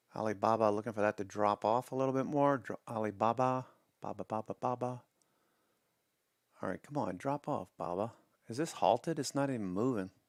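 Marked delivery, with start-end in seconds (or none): 8.5-10.1 sarcastic, put-on baffled disbelief. Watching a stock chart that barely moves: sarcastic. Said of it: "I'm being sarcastic, of course".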